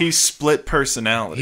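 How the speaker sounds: usual speaking voice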